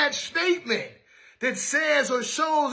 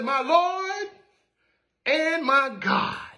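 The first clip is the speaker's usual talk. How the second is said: mock measured, slow, drawn-out, proclaiming exclamation; 3 semitones higher than usual. Retelling what he said after putting his hands in the mark: retelling a loud cry. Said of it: "he says in a loud voice".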